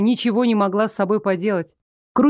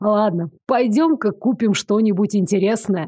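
plain

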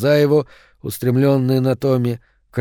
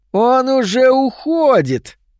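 needling, thin, very high mocking voice; 12 semitones higher, 4 dB louder than usual. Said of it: "передразнил тонкий голос Томми".

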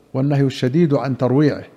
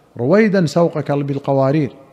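ordinary talk, nothing marked

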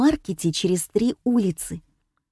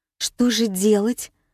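plain

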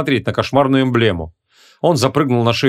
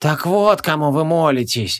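murmured, mumbled words; 2 semitones higher than usual. Narrator reads a creature's reply to a sorcerer, muttering. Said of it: "пробормотал эйст".

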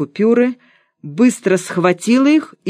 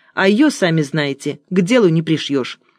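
ordinary delivery, nothing marked

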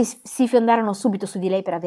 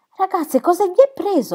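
very high, aghast, dismayed outcry; 10 semitones higher than usual. In a novel, a woman exclaims in dismay at the other girls. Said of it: "esclamò Gertrude sbigottita".

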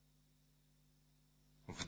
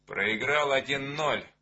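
ordinary delivery

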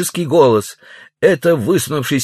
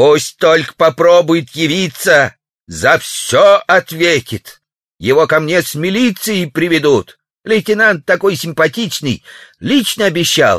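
severe, icy, stern, cold pronouncement. A woman answers a neighbor from a second-floor window; stern and cold. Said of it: "произнес сурово и холодно".

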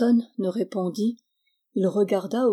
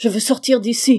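loud, forceful crying out; 3 semitones higher, 7 dB louder than usual. A man leaps up in front of the doctor, crying out forcefully. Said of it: "s'écria-t-il avec force".

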